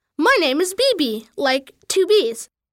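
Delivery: ordinary delivery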